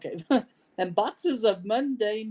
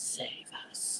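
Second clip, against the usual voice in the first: hoarse, raspy, hushed whisper. Voicing a voice heard in the players' heads: raspy whisper. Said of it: "a raspy whisper that's like".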